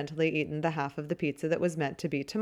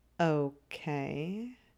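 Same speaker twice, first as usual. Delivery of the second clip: slow, unhurried, much quieter; 5 dB quieter than usual. A character answers a woman in the story, slowly. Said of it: "Greg says slowly".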